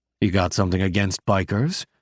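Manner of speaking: ordinary delivery, nothing marked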